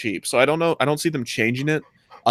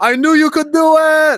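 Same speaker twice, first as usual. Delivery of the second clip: shrill, very high, loud, encouraging cheering yell; 8 dB louder than usual. Retelling a crowd cheering across a river for someone fishing: retelling a yell. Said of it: "someone yells".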